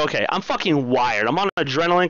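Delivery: ordinary talk, nothing marked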